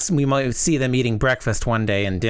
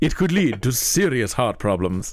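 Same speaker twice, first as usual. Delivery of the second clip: put-on old vampire count voice, played up. Voicing Liz reading a diagnosis, done as Dracula: Dracula voice. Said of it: "imagine Liz as one of the Draculas".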